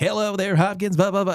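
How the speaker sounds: outgoing, perky, poppy, high radio-host patter. Speaker mocking a show character's narration, imitating a poppy radio host. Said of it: "outgoing, poppy radio host".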